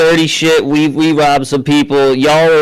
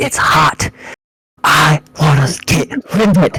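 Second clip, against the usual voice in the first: low voice, dropped and kept down. Imagining what they would say about the backpack, lowered voice. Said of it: "I'm gonna lower my voice and be like".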